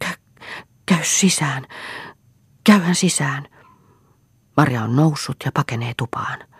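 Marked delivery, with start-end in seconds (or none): 0.0-3.5 breathless, pitched-up stammer, tripping over words. A narrator reads Juha's words to Marja after a struggle, breathless and stammering. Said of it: "sanoo hengästyneenä ja sammaltaen".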